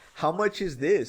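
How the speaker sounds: mock, high, feigned clueless and innocent tone. Retelling a scene where Spike asks the price: imitating Spike, oblivious. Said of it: "the way he says it is, like, he's so oblivious".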